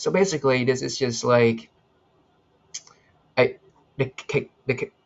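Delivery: tripping over words, stuttering. Explaining an emoji to viewers, stuttering. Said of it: "I'm stuttering".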